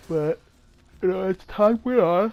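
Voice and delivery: very loud, high talk with words stretched by yawning. Recounting past events on video, speaker talks through a yawn. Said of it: "I gotta stop yawning".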